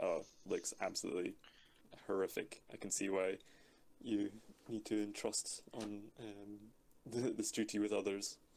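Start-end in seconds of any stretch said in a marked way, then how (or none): none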